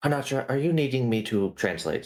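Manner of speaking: mock whisper. Leaning in to a companion in a tense meeting, quieter voice. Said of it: "So I'm just making my voice quieter".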